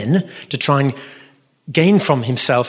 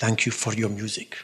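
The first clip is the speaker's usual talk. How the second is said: put-on Polish accent in English; 4 semitones lower, 10 dB quieter than usual. Retelling what the Pope said when giving a medal: imitating a Polish accent. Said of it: "in his Polish accent".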